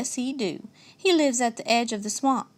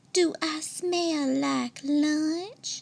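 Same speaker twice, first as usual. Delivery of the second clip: very slow, syrupy, honeyed, sugary sweet voice; 4 semitones higher than usual. Reading a story aloud, a skunk teasing an alligator: sugary sweet voice. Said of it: "asks in a sugarcane voice".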